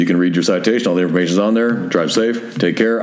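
usual speaking voice

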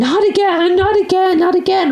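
shrill, very high, frantic repeated shrieking scream. Speaker retells a young boy running around the house, imitating a boy screaming. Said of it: "he's screaming".

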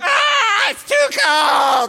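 put-on high, loud, slow crying toddler voice. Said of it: "He's like".

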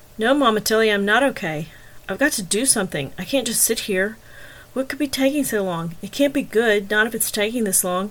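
plain

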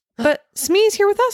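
crying out, pitched very high. Narrator voicing the first-person character during a hiding game: crying out. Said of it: "I cried".

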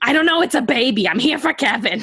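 high, mild half-yell. Retelling how an actress answered reporters on a red carpet: imitating someone yelling. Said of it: "she just starts yelling at the reporters".

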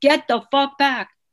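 loud, high-pitched barking yell. Retelling what a police officer yelled at the speaker: retelling a loud yell. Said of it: "very loudly".

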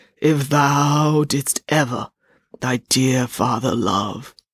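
heavy, plodding, slow, ponderous ghost voice. Narrating a story where a ghost speaks again to a young man, slow, ponderous ghost voice. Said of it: "The ghost spoke again in a slow, ponderous voice".

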